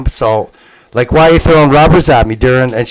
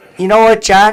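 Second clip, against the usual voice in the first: put-on Cape Breton accent, pitched higher; 8 semitones higher than usual. Retelling what his mother said about the vaccine: imitating Judy's Cape Breton accent. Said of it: "she has a Cape Breton accent".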